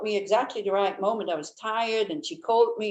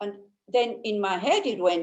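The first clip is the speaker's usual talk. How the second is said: ordinary talk, nothing marked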